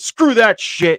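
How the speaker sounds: loud, high, upset yelling outburst. On a streamed show, refusing to give him a reaction, yelling. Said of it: "Sorry for yelling".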